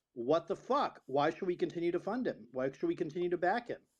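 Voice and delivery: ordinary delivery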